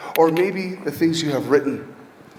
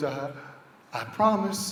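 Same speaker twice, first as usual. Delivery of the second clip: tearful, weeping voice; 2 semitones lower, 9 dB quieter than usual. Retelling a mother's promise at a new school: imitating a mother crying. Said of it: "The mom cries and goes".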